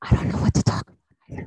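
ASMR-style whispering. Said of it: "we're doing A S M R for five minutes".

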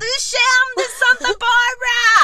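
high, loud, cheering shout.

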